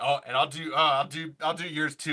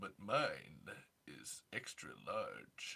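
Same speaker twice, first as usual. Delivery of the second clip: put-on campy actor voice, lower and quieter; 12 semitones lower, 16 dB quieter than usual. Doing an impression of an actor as the Sulu character: George Takei voice.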